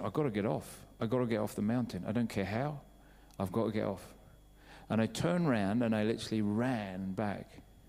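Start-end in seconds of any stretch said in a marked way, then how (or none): none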